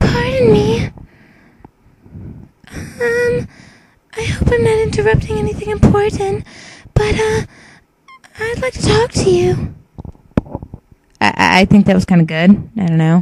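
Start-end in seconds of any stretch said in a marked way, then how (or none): 0.0-9.7 hushed, soft, very high-pitched voice. Auditioning for a character: soft Salmon voice. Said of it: "I'm just gonna stick with the soft voice".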